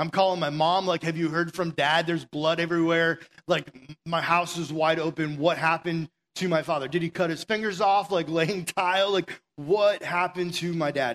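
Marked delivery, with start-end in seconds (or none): none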